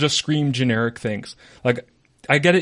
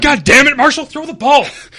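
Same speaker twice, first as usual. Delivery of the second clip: very high-pitched, very loud scream; 14 semitones higher, 9 dB louder than usual. Describing parents screaming from the stands at the quarterback: imitating a parent screaming. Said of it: "And they start screaming".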